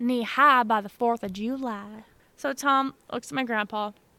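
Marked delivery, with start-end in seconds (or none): 0.0-2.0 light, little rural country twang. Repeating the saying after being told to add country twang, little country twang. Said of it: "You gotta get that little country twang in there".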